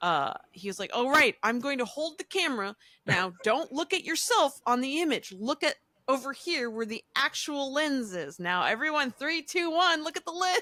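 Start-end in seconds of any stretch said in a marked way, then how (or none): 0.9-10.6 stern presenter-style voice. Retelling a selfie where he held the camera: Bill Nye impression. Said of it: "That was a very good Bill Nye impression".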